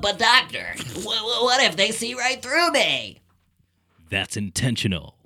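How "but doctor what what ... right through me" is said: high, swooping, quacking voice. Speaker trying out a line that the listener calls Donald Duck: Donald Duck voice. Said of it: "Duck voice".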